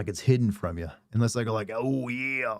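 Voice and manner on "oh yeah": put-on gruff wrestler voice. Showing how a gruff put-on voice sounds: Macho Man voice. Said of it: "now I just sound like Macho Man".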